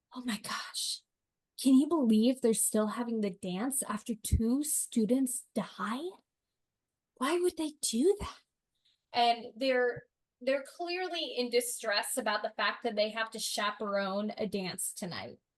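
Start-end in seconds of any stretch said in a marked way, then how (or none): 0.1-8.3 hushed, whispered voice. Voicing teachers whispering together about still having the dance: whispering. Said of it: "they're just whispering, like".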